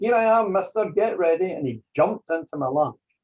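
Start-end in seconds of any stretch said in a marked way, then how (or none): 0.0-1.5 put-on high, loud shout in a small boy's voice. Retelling a little boy's voice shouting from the dark: imitating a little boy shouting. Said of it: "the same little boy's voice, shouting".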